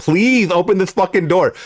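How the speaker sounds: put-on begging. Acting out pleading with an AI to open the door: acting out pleading. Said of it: "plead with the fucking A I".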